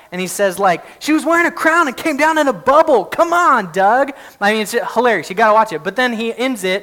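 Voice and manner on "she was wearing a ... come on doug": high-pitched, screaming rant. Retelling a viral video where a guy screams at another: imitating someone screaming. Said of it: "he's screaming in the face of this guy".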